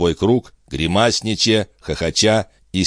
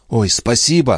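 happy, eager, joyful exclamation; 4 semitones higher than usual. The rescued one answers the stranger who offers to walk together: joyful exclamation. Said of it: "радостно воскликнул Пин".

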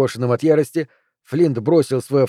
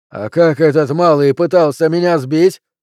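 yelled-out, loud, outraged shouting; 3 semitones higher, 5 dB louder than usual. A narrator reads a character's line as he yells again, shouting. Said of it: "вновь заорал Пелвис".

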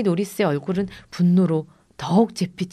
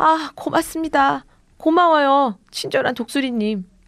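high, loud shout; 7 semitones higher than usual. Brandon shouts after the eagle as it flies away. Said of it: "브랜든은 날아가는 독수리 뒤에 대고 소리쳤어요".

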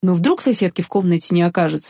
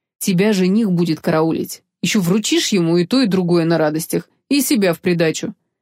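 ordinary delivery

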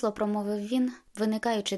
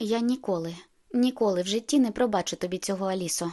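ordinary delivery

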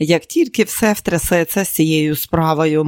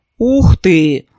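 sympathetic exclamation, louder; 2 semitones higher, 5 dB louder than usual. Neely reacts to Jennifer saying she is two months pregnant: sympathetic exclamation. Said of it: "співчутливо вигукнула Нілі".

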